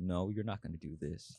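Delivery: fake deep sinister voice. Retelling a South Park scene where Jeff Bezos refuses the mayor: low evil voice imitating Jeff Bezos. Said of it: "just very low, just very evil".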